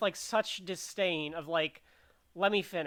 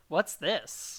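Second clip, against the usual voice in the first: put-on disgusted voice; 2 semitones lower than usual. Retelling a movie character's reaction to a creature: imitating Obi-Wan, disgusted. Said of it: "he's, like, disgusted by the presence".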